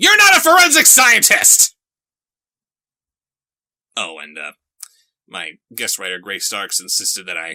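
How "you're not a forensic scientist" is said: very loud, high-pitched, shrill shouting. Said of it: "Sorry for yelling".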